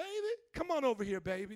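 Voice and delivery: put-on American Southern accent, streetwise talk. Retelling a man calling a woman over, imitating a Southern accent. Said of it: "That's how they talk in the South".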